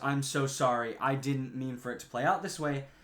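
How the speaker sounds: mock sobbing, tearful voice. Retelling a story, the speaker acts out an apology, imitating someone sobbing. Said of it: "is sobbing and just goes".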